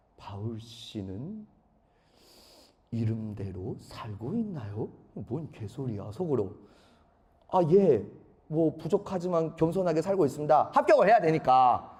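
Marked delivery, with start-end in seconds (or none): 0.2-4.9 very low, very soft, slow, deep professor's tone. Retelling a nervous interview, act out the professor's question to you, imitating the professor's way of speaking. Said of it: "그 교수님 말투가 실제 이렇습니다".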